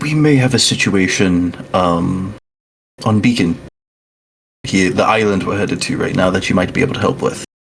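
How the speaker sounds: voice dropped a touch, discreet. Sharing news once Peanut is out of range: lowered voice. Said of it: "I think my voice will drop a little bit".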